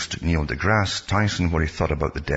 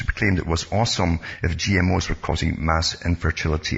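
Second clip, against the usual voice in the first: usual speaking voice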